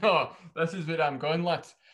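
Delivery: firm, decisive tone. Retelling how Norris is now at the start: imitating Norris sounding decisive. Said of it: "now he's just kinda like".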